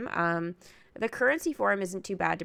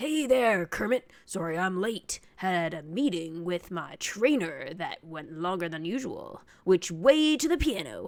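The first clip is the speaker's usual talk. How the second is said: deep, raspy character voice. Performing a scene with Kermit as Rolf, Rolf voice. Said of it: "get a raspy enough voice to and deep enough".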